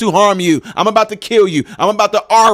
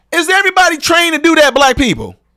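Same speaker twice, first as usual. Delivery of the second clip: full-on shouting, high, swooping yell; 7 semitones higher than usual. Speaking straight to the audience, yelling. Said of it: "I'm sorry I'm yelling".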